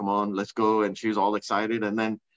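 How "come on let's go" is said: ordinary talk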